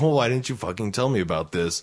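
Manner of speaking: mock angry, fast, pissed-off scolding outburst. Retelling his mom's reaction on hearing late about the dress-up day, imitating her angry. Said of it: "So she got all pissed".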